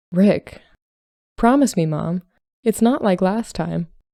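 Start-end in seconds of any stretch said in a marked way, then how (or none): none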